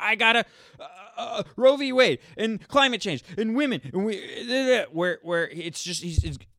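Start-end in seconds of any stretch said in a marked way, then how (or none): 0.0-4.8 hysterical high-pitched babbling. Mocking another speaker by imitating him: mocking hysterical imitation. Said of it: "He sounds like a woman who just found out about politics, and he's like".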